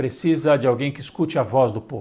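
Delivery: ordinary talk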